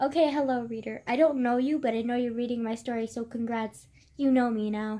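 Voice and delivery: ordinary talk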